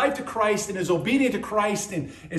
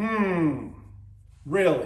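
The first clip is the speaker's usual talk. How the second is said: heavily doubtful, skeptical, sarcastic hmm; 4 semitones lower than usual. Responding to two answers people give: skeptical and sarcastic. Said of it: "I say with great skepticism and sarcasm".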